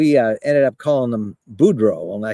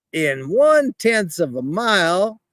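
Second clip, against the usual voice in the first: put-on slow, stretched-out Cajun accent, pitched up; 8 semitones higher than usual. Retelling a navigation direction from Waze, imitating Waze's slow Cajun voice. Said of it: "he kind of talks like a lot of Cajuns, really slow".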